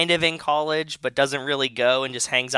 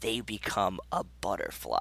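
very quiet, grave, earnest, dead-serious delivery; 5 semitones lower, 11 dB quieter than usual. Retelling a story, quoting a man's reply about the butterfly, mock-serious delivery. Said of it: "says it like real serious".

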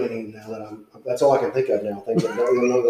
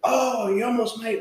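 mock loud talking, higher pitch; 11 semitones higher, 3 dB quieter than usual. Retelling a golfer's remark near a tee box, imitating someone talking loud. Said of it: "real loud".

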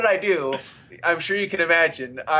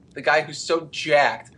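usual speaking voice

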